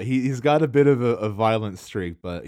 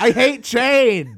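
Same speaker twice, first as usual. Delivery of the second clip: mock angry ranting, higher and louder; 7 dB louder than usual. Teasing the other speaker by acting out an angry guy on YouTube: imitating an angry YouTube guy. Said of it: "You sound like an angry guy on YouTube".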